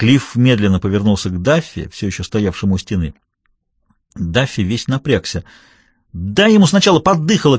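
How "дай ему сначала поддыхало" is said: high, urgent shout carrying across a room. Annabell calls out to Cliff as he turns toward Duffy, shouting. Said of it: "крикнула Аннабелл".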